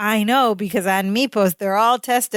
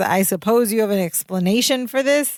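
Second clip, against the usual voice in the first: normal talking voice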